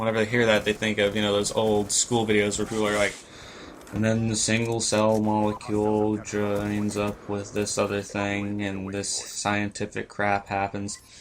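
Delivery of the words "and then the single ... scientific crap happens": one-note droning, flat, slow monotone. Describing monotone as in old-school science videos: flat monotone on one note. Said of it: "That's that is a monotone".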